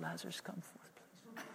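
very quiet, timid, meek, almost whispered. Mocking a timid preacher's weak call to Lazarus: mock timid plea. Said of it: "He didn't go".

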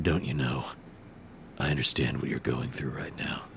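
barely audible, very soft, caring empathic whisper. Mocking an actor's emotional line delivery: Nathan Fillion empathic whisper. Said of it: "talk in an almost audible whisper when he's being empathic".

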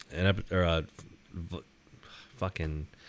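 stammering. Describing downtown Bay City and searching for a comparison: stuttering. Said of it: "I keep stuttering now".

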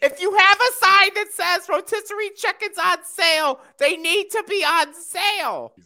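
very high, shrill, loud, indignant and entitled ranting. Complaining about a sign that said chickens were on sale, in a Karen voice. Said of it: "we're just doing Karen voice".

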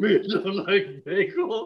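drawn out, big and loud. Joking about a Cookie Monster bagel: Cookie Monster voice. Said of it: "He's like".

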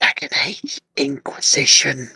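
whispered, hushed, kept under the breath. Naming the next game, a favorite of Letitia's, whispering. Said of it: "I'm just going to whisper this".

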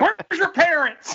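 shrieking, very high pitch. Telling a story about a big guy in a theater, imitating him screaming. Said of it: "he screams it".

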